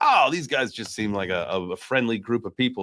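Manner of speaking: ordinary talk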